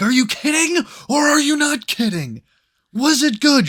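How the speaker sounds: very high-pitched, loud, shrill screaming. Retelling a phone call where the speaker screamed at a friend: retelling own screaming. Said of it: "I started screaming at you on the phone".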